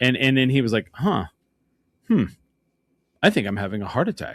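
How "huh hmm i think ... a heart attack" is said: acted utterly matter-of-fact, calm and unbothered. Retelling what a man said while looking at his hands, retelling a very calm remark. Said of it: "he said it like the most calm way possible".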